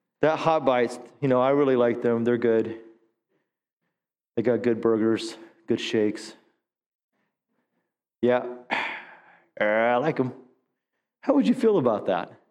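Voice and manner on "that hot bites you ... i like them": put-on listless, flat, unexcited monotone without passion. Imitating his voice, mock-flat with no excitement or passion. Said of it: "There's no excitement or passion in his voice".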